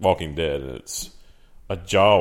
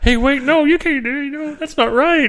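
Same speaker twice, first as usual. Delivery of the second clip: loud, very high, squeaky tiny cartoon bear voice; 6 dB louder than usual. Describing a bad scene, voicing the bear: little bear voice. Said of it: "that little bear voice".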